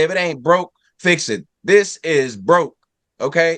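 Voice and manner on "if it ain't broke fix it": plain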